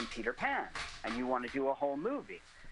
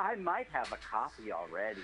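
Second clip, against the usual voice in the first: mock smug, self-satisfied, pleased-with-itself delivery; 2 semitones lower than usual. Retelling a story, the speaker quotes Jeff Goldblum's reply to the director: smug Jeff Goldblum quote. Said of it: "smugly says".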